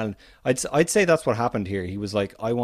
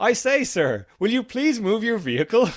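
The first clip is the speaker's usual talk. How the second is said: polite, very high, nicely asking tone; 12 semitones higher, 3 dB louder than usual. Retelling a polite plea from a protest scene: imitating Frank Kelly's polite line. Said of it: "poor old Frank Kelly is like".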